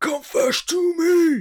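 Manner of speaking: very high, loud, menacing voice. Describing a film character holding a copper above the street: imitating a threatening voice. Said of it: "very funny with that voice is it's very good if you're threatening somebody".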